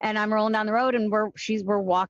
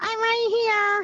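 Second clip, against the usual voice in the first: put-on very high voice of a small child; 12 semitones higher than usual. Retelling how Helene would cut in on the CB radio, Helene's little nine-year-old voice. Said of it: "In her little nine year old voice".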